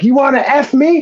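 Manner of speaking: acted-out, high-pitched screaming. Telling a story, the speaker acts out how they screamed at some teenagers in traffic. Imitating screaming. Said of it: "I'm screaming".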